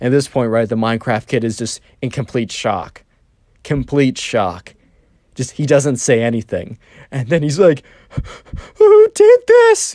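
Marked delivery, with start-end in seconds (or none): 8.8-9.9 put-on very high, tearful, whimpering, crying voice. Retelling a story, the speaker acts out the Minecraft kid; imitating a crying, whimpery voice. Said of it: "a kind of like a crying, whimpery voice".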